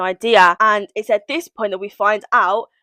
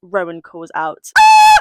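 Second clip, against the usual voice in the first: ordinary delivery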